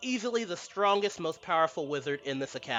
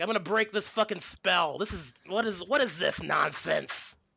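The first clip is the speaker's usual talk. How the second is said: put-on wrathful rage, mock-furious. Acting out the guy who sent his students after the speaker, acting out wrathful rage. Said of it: "He's wrathful".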